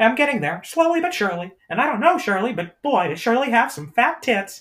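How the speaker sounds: loud voice pitched way up, swooping. On the show, practicing an impression and making him say something inappropriate, Mickey Mouse voice. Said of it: "that's still Mickey Mouse".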